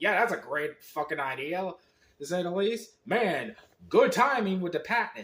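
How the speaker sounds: heavily sarcastic tone. Complaining about a badly timed ad campaign: sarcastic tone. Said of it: "You can tell I'm being fucking sarcasm here".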